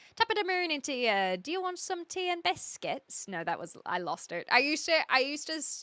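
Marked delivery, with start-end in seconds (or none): 0.2-3.3 put-on Irish accent, pitched up. Speaker tries out the Irish accent they were learning, Irish accent. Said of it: "you want to learn the Irish accent?".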